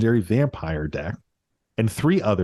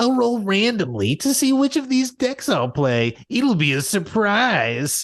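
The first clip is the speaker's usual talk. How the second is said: very high, exaggerated whine, acted, not nasal; 11 semitones higher than usual. Mocking someone's self-righteous talk in a put-on whiny voice. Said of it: "insert whiny bitch voice here".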